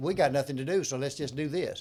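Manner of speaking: sarcastic put-on voice. Sarcastically imitating the people who started prohibition: sarcastic quote. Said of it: "warn us that you're being sarcastic".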